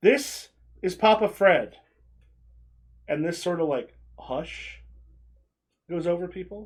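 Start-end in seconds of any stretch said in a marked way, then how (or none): 0.0-1.8 loud, booming, drawn-out announcer-style voice. Voicing a character introducing a friend to a gathering crowd: loudly announcing. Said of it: "And he kind of loudly".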